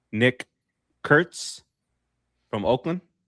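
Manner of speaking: really slow, drawn-out name, each syllable spaced. Announcing a name in a player ranking: said really slowly. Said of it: "I'm gonna say this name really slowly".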